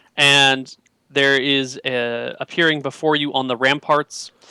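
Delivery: plain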